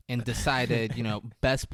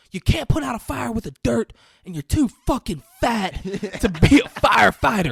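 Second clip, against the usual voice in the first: high-pitched, shrill, very loud screaming; 12 semitones higher, 12 dB louder than usual. Retelling a scene where someone screams at a recruit: retelling a screamed insult. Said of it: "He's just screaming at him".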